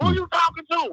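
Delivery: angry snap. Retelling a woman's reaction to a man's greeting: imitating a woman going off. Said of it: "the woman goes completely off".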